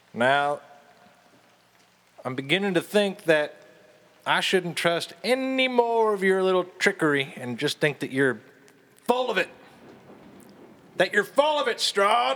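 shouting loudly. Voicing a character calling into a castle's echoing halls: shouting down echoing halls. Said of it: "he just shouts his voice down the echoing halls".

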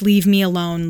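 ordinary delivery

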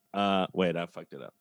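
plain

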